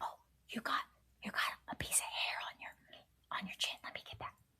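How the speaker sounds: very soft, hushed ASMR whisper. Describing ASMR role play videos, imitating an ASMR whisper. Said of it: "in a whisper".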